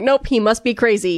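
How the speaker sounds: plain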